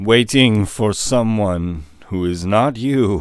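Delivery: very slow, stretched-out, drawn-out words. Voicing a character answering a player character's question, very slow. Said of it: "He says very slowly".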